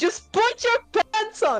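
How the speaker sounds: screaming. Voicing a character in a game scene who turns away, scream the line. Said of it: "turn away and screaming like".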